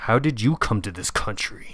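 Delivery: mock-angry tone. Reading out a message in the tone it was written, mock-angry. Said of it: "angry, I said it angry".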